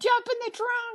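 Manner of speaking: put-on, shrill, very high shouted yell. Retelling how she yelled at him to jump in the trunk: imitating someone yelling. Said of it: "She yelled at him".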